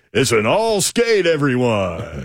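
very drawn-out, slow, swooping skating rink announcer voice. Imitating someone doing a skating rink announcer: Mike Keith's skating rink announcer voice. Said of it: "his impression of skating rink announcer guy".

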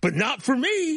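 put-on older gentleman's voice. Retelling a viral video of a man facing a knife: imitating an older gentleman. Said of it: "He goes".

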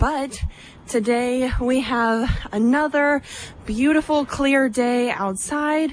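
a little winded, out of breath. A reporter broadcasting live answers the host's good-morning greeting: out of breath. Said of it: "Sorry I'm a little out of breath".

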